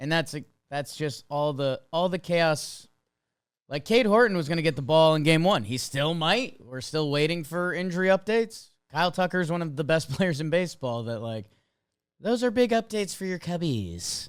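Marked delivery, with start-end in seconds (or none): 12.2-14.3 sleazy, sing-song delivery. Giving baseball injury updates, the speaker slips into a sleazy finance guy voice. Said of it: "That was like sleazy finance guy".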